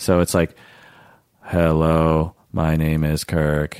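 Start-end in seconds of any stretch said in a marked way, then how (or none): 1.4-3.8 very slow, flat, lilt-free droning monotone. Demonstrating a monotonous speaker while discussing how the brain hears monotony, monotone voice. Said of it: "I am speaking in a very monotonous voice".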